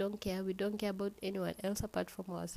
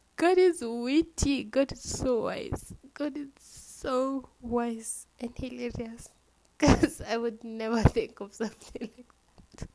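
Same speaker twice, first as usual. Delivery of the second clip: crying with laughter while talking; 4 semitones higher, 7 dB louder than usual. A speaker finds their own story hilarious, crying with laughter. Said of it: "I don't know why I'm crying due to laughter".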